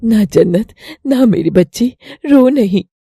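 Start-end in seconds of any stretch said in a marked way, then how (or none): none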